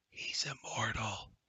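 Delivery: hushed, quiet whisper. Introducing Durnan to the group, the narrator voices Valendra: Valendra whispering. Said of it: "she whispers".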